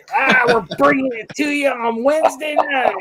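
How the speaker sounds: very high, hammed-up put-on voice. Doing a Wolfman Jack voice after suggesting everyone talk like him. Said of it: "start talking like Wolfman Jack".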